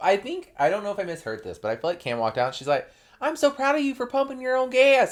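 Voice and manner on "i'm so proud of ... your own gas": put-on over-the-top, hardcore country accent, very high-pitched. Retelling what Cam said when she walked out: Cam in a country accent. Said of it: "I don't know why I give her an accent".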